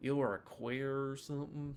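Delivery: put-on southern American accent. The speaker repeats the question, saying it with a southern accent. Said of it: "I say that with a southern accent".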